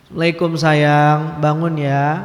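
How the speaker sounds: tender, gentle, coaxing, sweetened tone. Acting out a wife gently waking her husband: put-on gentle, softened voice. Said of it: "Itu dilembut-lembutin".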